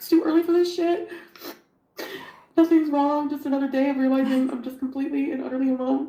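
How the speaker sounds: high, tearful voice, crying through every word. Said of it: "I'm just crying my eyes out".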